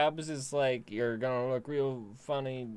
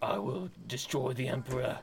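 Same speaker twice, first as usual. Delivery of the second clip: put-on Australian accent, quieter; 5 dB quieter than usual. Showing a Russell Crowe impression: Russell Crowe impression. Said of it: "can't really do an impression other than".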